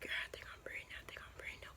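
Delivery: acted-out whispering. Retelling telling her the news with someone in the next room: retelling a whisper. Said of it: "I'm just sitting here whispering".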